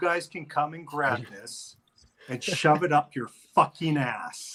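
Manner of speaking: furious, pissed-off angry voice. Retelling what an irate caller said on the phone, acting out his rant in a put-on angry voice. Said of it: "I already answered the phone like Crocodile Hunter".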